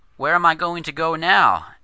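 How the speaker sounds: small, high, trembling, quaking little voice. A boy whose father is gone leans on the narrator's shoulder; quaking little voice. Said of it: "he asked in his quaking little voice".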